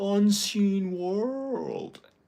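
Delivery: very high, loud put-on American accent. Retelling a performer copying the speaker's words in a mock American accent. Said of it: "and she's like".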